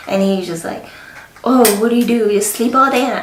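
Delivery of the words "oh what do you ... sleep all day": put-on sassy, sarcastic voice. Retelling what her husband says to her: imitating sarcastic husband. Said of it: "sarcastically, being sassy".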